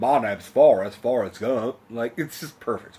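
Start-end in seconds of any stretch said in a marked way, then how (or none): 0.0-1.8 loud, raised, put-on Southern Alabama accent. Showing the others how the film character sounds: Forrest Gump voice. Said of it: "it's kind of fun to imitate".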